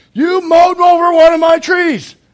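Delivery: shrill, high, very loud, drawn-out booming scream. Husband retelling how his wife stormed at him on the mower, retelling her scream. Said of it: "she screams at me".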